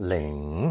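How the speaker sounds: Ling dipped down low in third tone. Explaining how a word for neck is pronounced: third tone on Ling. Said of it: "Pronounced third tone".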